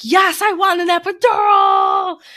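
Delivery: very high, very slow, drawn-out wailing scream. Retelling answering consent questions during a contraction: imitating own screaming during contraction. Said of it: "I screamed my date of birth".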